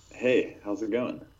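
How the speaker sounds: silky smooth, polished put-on radio voice. A podcast guest greets the host, in a silky smooth radio voice. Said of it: "you sound silky smooth voice right now".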